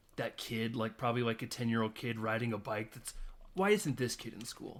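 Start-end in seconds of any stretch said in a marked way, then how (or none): none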